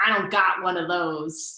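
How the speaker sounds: put-on slow, thick, hard New Jersey accent. Retelling what a woman in class answered, hard new jersey accent. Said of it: "with her like hard New Jersey accent".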